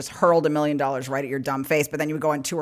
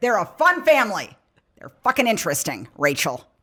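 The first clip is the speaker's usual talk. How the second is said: put-on almost-angry tone; 4 semitones higher than usual. Retelling what an aunt said about a family, imitating her almost-angry tone. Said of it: "She was like almost angry about it".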